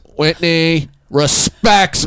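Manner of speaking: full-on, high-pitched shouting. Defending himself during the show, shouting. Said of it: "You're shouting".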